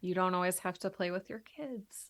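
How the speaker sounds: reined-in, held-back, low-key microphone voice. Meaning to say it loud into the microphone, the speaker drops into a quiet voice. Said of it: "I I got quiet".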